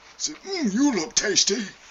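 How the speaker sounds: very high, loud, botched bear voice. Narrating a scene and voicing the bear in it, in an attempted bear voice. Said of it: "I can't do a bear voice".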